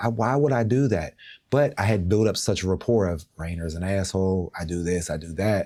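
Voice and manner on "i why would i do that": mock-crying tearful pleading, higher pitch. Recalling being blamed by the school for the kids' asthma attacks, retelling crying and begging. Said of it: "I'm like crying, begging".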